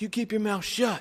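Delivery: very high-pitched voice. Retelling what a wrestler said from the ring to kids: Ric Flair impression. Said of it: "And he goes".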